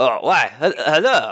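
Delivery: put-on French accent creeping in, seemingly unintended. Narrator voicing Lewis greeting the players, Lewis in accidental French accent. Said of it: "everyone is French now".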